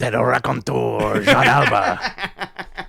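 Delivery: put-on very slow, drawn-out French accent. Imitating Tony Khan greeting a wrestler: French-accented Tony Khan voice. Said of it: "That's my Tony Khan from now on".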